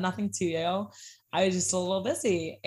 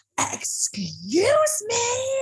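put-on very high, shrill, loud, swooping all-out scream; 4 dB louder than usual. Retelling a customer climbing over the bar: imitating a customer screaming. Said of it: "she is screaming at the top of her lungs at me".

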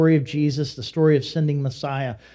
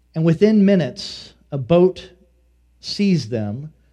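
normal talking voice

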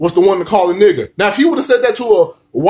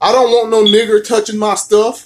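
ordinary talk, nothing marked

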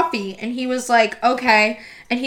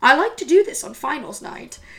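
put-on British, English-sounding accent; 2 semitones higher than usual. Retelling what the professor said at 4:30 in the morning, in a British accent. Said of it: "Your British accent is actually pretty solid".

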